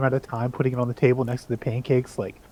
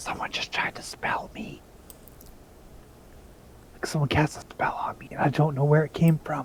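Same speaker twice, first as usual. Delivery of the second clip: hushed, breathy, barely voiced secretive whisper; 3 semitones higher, 6 dB quieter than usual. Leaning in close and gesturing everyone to lean in, the character speaks, whispering. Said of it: "I'm gonna whisper".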